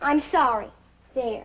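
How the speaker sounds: reluctant and insincere. A young lady ordered to apologize right now gives in: grudging apology. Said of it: "And this time like you mean it".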